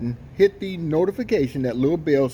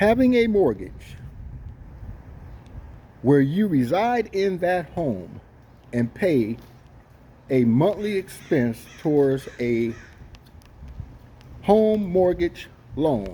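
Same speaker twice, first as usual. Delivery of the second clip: very slow, deliberate, spelled out word by word; 3 semitones higher than usual. Having announced he will say it slowly, the speaker says it really slowly. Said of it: "Let me say that really slow".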